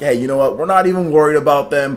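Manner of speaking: normal talking voice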